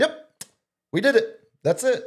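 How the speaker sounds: very high, acted, offhand, casual, nonchalant throwaway. Retelling a little brother's late-night news remark: imitating a nonchalant tone. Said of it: "it's just so nonchalant".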